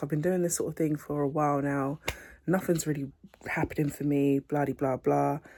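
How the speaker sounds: usual speaking voice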